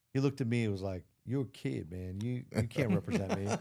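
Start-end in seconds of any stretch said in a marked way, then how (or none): 1.2-3.4 put-on man's voice, spoken much slower. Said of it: "Sound like a brother".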